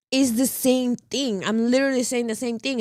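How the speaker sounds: ordinary talk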